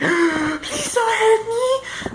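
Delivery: very high, slow, terrified crying voice. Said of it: "I'm just like".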